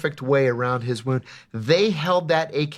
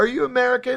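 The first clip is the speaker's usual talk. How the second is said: put-on Arabic accent, pitched very high; 10 semitones higher than usual. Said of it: "he be doing the accents too".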